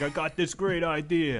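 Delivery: put-on Italian-sounding accent. Imitating Danny Trejo pitching a viewing order: Danny Trejo voice sounding Italian. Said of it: "he sounds Italian".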